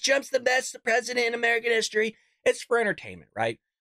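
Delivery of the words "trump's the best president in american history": theatrical, hammed-up put-on voice, pitched higher. Host describing the theatrics he does on the show, Trump voice. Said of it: "doing the Trump voice".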